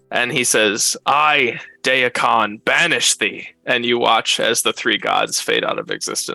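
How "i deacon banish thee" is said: slow, deliberate, drawn out, each word separated. A narrator voices a character's proclamation to the players, Deacon's booming proclamation voice. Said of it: "not scream so much as just like booming voice proclamation".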